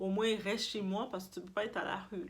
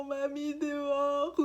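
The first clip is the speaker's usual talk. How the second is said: mock tearful crying, higher and louder; 6 semitones higher, 4 dB louder than usual. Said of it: "toute en pleurant".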